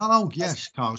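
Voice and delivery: put-on Dutch accent, pitched high. Answering a friend's teasing about accents, greeting Carl in a Dutch accent. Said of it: "that's my Dutch accent".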